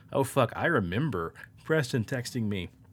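ordinary talk

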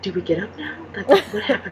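hushed, soft, barely voiced whisper. Retelling a moment after a film, imitating mom whispering. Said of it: "she whispered over to me".

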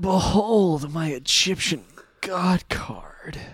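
sultry superhero voice. Recapping Kaiba summoning his god card, imitating Kaiba's sexy Batman voice. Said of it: "Kaiba's sexy Batman voice".

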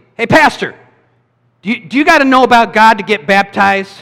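high-pitched shout. Acting out how a girl shouted a question at the speaker, a pastor, retelling a shout. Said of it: "she just shouts at me".

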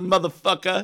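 put-on casual, offhand, tossed-off voice. Showing another speaker how the guest sounds: imitating Jason. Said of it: "he does, like".

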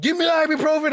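put-on yelling. Recounting painful cramps to a listener, retelling how they yelled. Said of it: "I'm like yelling".

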